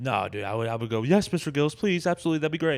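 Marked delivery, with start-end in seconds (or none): 1.0-2.8 mock groveling, loud, fawning, eager-to-please gush. Acting out answering an offer to open a show: acting fawning and eager. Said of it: "you're licking his feet".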